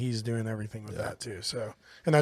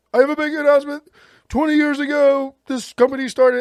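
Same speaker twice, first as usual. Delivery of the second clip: very high, loud, manic belted delivery; 11 dB louder than usual. Imitating a big announcement after buying a company: manic Tony Khan impression. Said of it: "came out manic as fuck".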